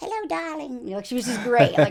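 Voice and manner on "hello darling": little, high, sweet voice. Recalling a talent show judge's greeting: Sharon Osbourne voice. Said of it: "her little voice".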